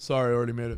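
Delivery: mock flat, expressionless voice. Retelling how the guy serving drinks handed one over and walked away, imitating a flat, personality-free reply. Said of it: "without like any personality or anything".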